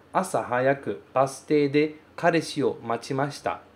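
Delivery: normal talking voice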